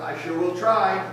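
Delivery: ordinary delivery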